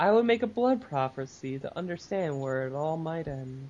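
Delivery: totally mellow, laid-back, smitten, lovestruck. Reading a villain's comic line as if he were mellow: totally mellow, lovestruck Atrocitus voice. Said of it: "totally mellow and kind of in love".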